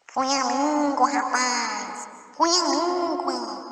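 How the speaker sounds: eerie, slow, high, very drawn-out spooky skeleton voice. Storyteller voicing a skeleton that lifts its head and names the killer, in a scary skeleton voice. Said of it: "falou com a voz assustadora".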